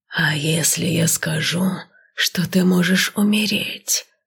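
sibilant, otherworldly, inhuman hissing voice. Narrator reading the oldest serpent's question, in a hissing inhuman voice. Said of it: "прошипел нечеловеческим голосом".

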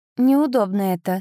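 ordinary delivery

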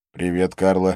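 ordinary delivery, nothing marked

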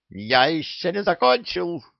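outraged, indignant tone. The parrot, objecting to the pirate Silver, indignant. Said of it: "возмутился попугай".

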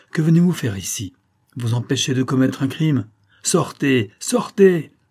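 urgent, exclaiming outcry. Reading the count's words to the countess at the door, crying out. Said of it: "s'écria le comte".

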